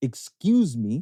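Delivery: put-on Canadian-accented speech. Retelling tapping a man to get his attention, Canadian accent. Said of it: "the Canadian accent".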